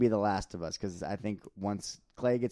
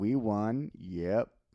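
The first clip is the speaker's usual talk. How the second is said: mock drunken speech. Retelling a championship interview: imitating drunk Draymond Green. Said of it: "Draymond was like".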